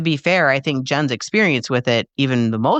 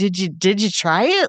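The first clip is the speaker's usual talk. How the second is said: mock timid, sheepish, halting, stumbling delivery; 7 semitones higher than usual. Retelling asking someone whether they tried it: retelling own sheepish question. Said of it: "this sheepish thing".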